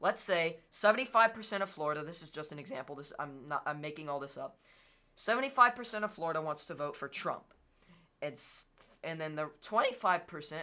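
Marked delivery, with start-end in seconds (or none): 8.2-10.6 voice cracking and breaking mid-sentence. Explaining a voting example to listeners, voice cracking. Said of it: "sorry for that voice crack".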